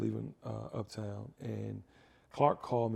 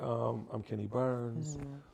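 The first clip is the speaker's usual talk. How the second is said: normal talking voice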